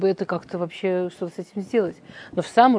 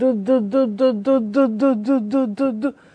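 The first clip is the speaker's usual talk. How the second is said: drawn-out, very slow heavy stutter on da; 4 semitones higher than usual. Telling a joke, the speaker voices the young man at the door: imitating a heavy stutter. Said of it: "он заикается".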